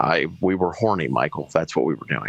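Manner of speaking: ordinary delivery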